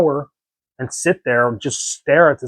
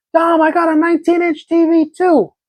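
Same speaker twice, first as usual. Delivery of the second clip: very high, excited yell; 4 dB louder than usual. Recalling yelling across the room to Dom, retelling a yell across the room. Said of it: "So I'm yelling across the room".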